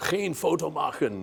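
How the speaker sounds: very high, rasping, rough, booming bellow. Retelling the voice that came when he raised his camera, retelling a booming voice. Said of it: "this booming voice of".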